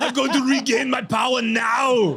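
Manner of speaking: high Austrian accent, long drawn-out "now". Jumping into personal power space, in an Arnold Austrian accent impression. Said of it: "if I hear the Arnold accent".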